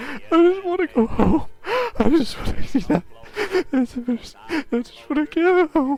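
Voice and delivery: very high-pitched, tearful weeping voice. Voicing a character curled in a ball on the floor: weeping while pleading. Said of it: "he's holding his knees, and he's weeping".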